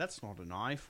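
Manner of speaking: put-on Australian accent. Asked whether they've worked on their Australian accent, showing an Australian accent. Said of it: "you worked on your Australian accent yet?".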